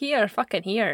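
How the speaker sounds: put-on Scottish accent. Trying the line again for a co-host, the speaker does a put-on Scottish accent. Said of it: "That is Scottish".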